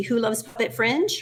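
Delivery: ordinary talk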